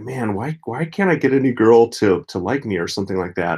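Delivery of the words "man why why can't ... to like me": normal talking voice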